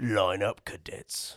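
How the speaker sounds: hulking brute voice. Asked what Grint sounds like, doing a big brute Grint voice. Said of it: "he's just, like, the big brute".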